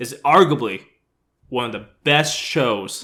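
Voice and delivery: sarcastic fake enthusiasm. Introducing a famous show with another speaker: sarcastic fake praise. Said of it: "we're being very sarcastic right now".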